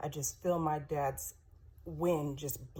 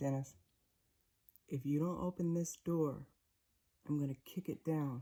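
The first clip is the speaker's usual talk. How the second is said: put-on calm, authoritative voice. Speaker retells a man outside his dad's door, imitating a calm authoritative voice. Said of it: "the man had a very calm, authoritative voice".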